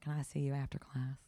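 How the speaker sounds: put-on Southern American accent. Retelling a school story, quoting a teacher after handing in an assignment: Southern accent. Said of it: "she had this great Southern accent, which unfortunately now, because I'm telling the story, I have to do".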